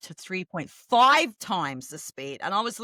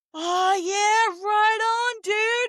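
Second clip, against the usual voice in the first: very slow, high Canadian dude drawl; 13 semitones higher, 3 dB louder than usual. Recalling people in Canada after moving there, imitating their slow talk. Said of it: "And it sounded so slow".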